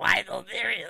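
very high, lazy, effortless bad villain voice. Mocking fans who barely try the voice: imitating a bad Joker voice. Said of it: "They're not even trying to do the voice".

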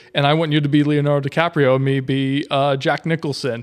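ordinary talk

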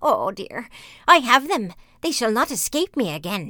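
loud, malicious, mocking jeer with spiteful laughter. Narrating her words as two children come near, mocking with malicious laughter. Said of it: "she laughed maliciously and said mockingly".

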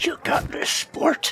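soft, hushed, barely voiced whisper. Playing a creature perched over an ally's head, encouraging him: whispering. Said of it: "I just whisper to Lance".

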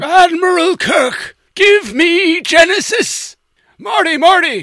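weird, very high, shrill, loud, booming drawl. Showing how Klingon voices turn into a weird Christopher Lloyd. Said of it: "a weird, uh, Christopher Lloyd".

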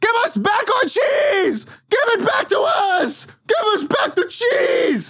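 angry, furious mob yelling. Voicing an angry mob demanding their cheese back: angry mob yelling. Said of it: "what is this angry mob yelling?".

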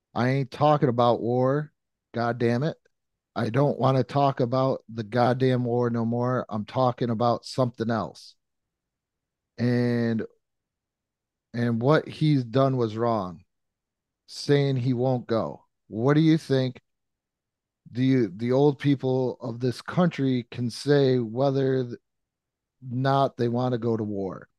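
plain

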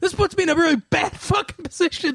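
high-pitched ranting, going-off outburst. Retelling a funny TV episode, imitating him going off. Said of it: "he just, like, goes off".

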